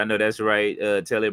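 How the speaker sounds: normal talking voice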